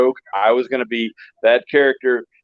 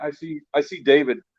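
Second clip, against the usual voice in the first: normal talking voice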